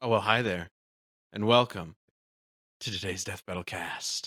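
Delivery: very low, sultry, seductive voice. Podcast host opening today's Death Battle cast, in a sultry voice. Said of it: "it's a sultry one today".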